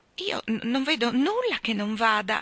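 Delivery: shy, hesitant, slow and timid beginning. A wife peers at her husband's feet in the dark hall, timid. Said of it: "cominciò a dire timidamente".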